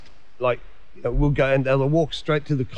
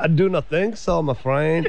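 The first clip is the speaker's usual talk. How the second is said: mock Mexican-accented voice; 3 semitones higher than usual. Chatting about an actor's screen credits, a speaker answers in a Mexican accent. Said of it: "That was a Mexican accent right there".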